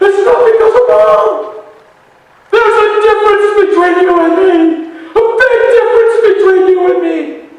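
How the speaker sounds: mock overwrought outburst, very high, very loud. Retelling a man in a hospital hall pointing at him, imitating frustrated, overwhelmed man. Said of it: "he looks frustrated, overwhelmed, bags of emotion".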